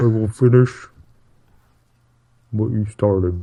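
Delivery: indistinct, mumbled delivery. Asked which voice they mean, the speaker repeats the line in a quiet Kylo Ren voice. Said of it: "[name], can you speak up?".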